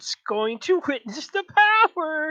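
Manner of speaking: high, loud, shrill, booming, sinister cackling voice. Voicing a laughing voice in a player's head: evil laughing voice. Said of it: "it's just kind of an evil laughter".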